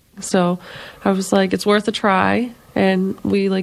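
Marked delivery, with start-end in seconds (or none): none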